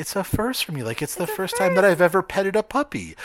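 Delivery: put-on sugary voice, very high-pitched and sweet. Mimicking the other speaker's words back to them, imitating a sweet tone. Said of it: "the tone of voice that you say this in is in such a sweet".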